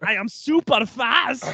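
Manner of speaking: put-on Russian accent. Mocking an actor's movie role: Aaron Taylor-Johnson's Russian accent. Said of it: "my impression of Aaron Taylor Johnson's Russian accent".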